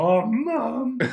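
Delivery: very high-pitched, loud voice. Asked about Muffle Dog, the speaker demonstrates the Muffle Dog voice. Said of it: "I could do the voice of Muffle Dog".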